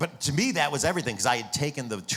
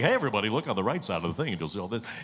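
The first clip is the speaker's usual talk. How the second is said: radio DJ voice with tour guide patter. Recalling how they addressed riders as a tour guide, in a DJ-style tour guide voice. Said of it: "kind of like a D J or something".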